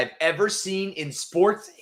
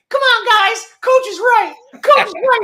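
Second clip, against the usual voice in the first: high, loud, mock rah-rah goody-goody voice. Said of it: "doing this Jalen Brunson voice".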